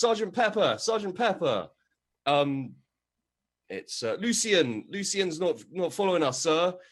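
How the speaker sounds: calling out loudly. Voicing a corporal who sees someone crawling away: calling out to the sergeant.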